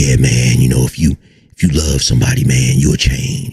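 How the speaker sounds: very low, put-on deep bass voice. Mocking people who talk to camera in dim lighting: put-on deep voice. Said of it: "they had a deep voice and be like".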